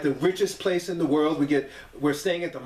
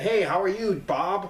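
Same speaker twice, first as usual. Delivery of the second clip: mocking, put-on nerdy voice in a much higher pitch; 3 semitones higher than usual. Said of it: "say that they talk like that".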